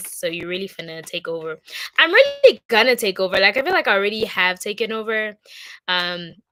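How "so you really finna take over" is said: normal talking voice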